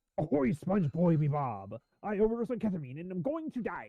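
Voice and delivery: bad cartoon sailor voice, swooping and swinging. Showing how it would sound if one of them tried it, bad Mr. Krabs voice. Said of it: "tried to do a mister Krabs voice".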